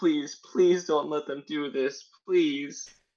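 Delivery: high-pitched, desperate, pleading voice. Voicing a captive about to be killed: begging and pleading. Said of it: "they're begging you".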